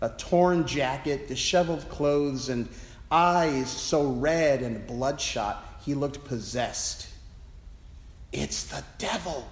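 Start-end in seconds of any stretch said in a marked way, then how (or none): 8.3-9.5 hushed whisper under the breath. Watching a wild-looking man while passing on rounds, whispering to oneself. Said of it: "I whispered to myself".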